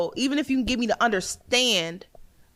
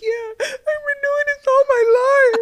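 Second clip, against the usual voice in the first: pretend teary voice, higher and louder; 6 dB louder than usual. Acting out a teary confession in a serious conversation: mock tearful, tearing up. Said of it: "a conversation where I'm tearing up".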